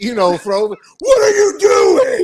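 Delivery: very high, very slow, drawn-out shout. Describing his bowling, he acts out yelling at his own hand: retelling yelling at himself. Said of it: "I'd be sitting there like yelling at my hand".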